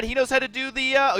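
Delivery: voice breaking, cracking mid-word on uh oh. Caster commentating a game video, voice cracking. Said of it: "you guys like that voice crack?".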